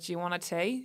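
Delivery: homemade put-on Australian accent. Recapping a show, quoting a woman in the scene, in an Australian accent. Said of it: "that's my Australian accent".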